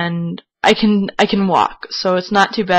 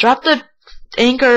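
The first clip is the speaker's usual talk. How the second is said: put-on yelling, raised pitch; 5 semitones higher than usual. Retelling telling a friend to drop the anchor: imitating yelling. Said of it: "I'm yelling at him".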